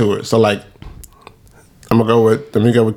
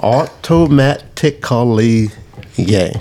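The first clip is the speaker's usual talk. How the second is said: very slow, automatic syllable-by-syllable sounding out. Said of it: "Why you say it like that?".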